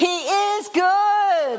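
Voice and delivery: put-on shouting. Retelling running home full of energy, re-enacting shouting. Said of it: "I was shouting".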